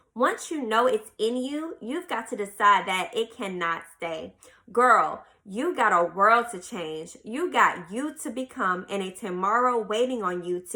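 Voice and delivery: ordinary talk, nothing marked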